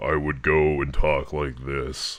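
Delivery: fake, forced, put-on deep voice. Showing what a faked voice would sound like, not a voice changer: fake lower voice. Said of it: "If I was doing a fake voice to go lower".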